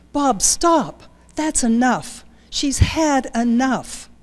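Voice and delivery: urgent, cutting-in voice. Reading a childhood memory aloud, the narrator voices the mother calling to the father: urgent. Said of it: "my mom's voice, urgent".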